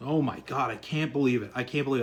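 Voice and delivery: imitated grumbling voice. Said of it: "grumbling in the front lounge".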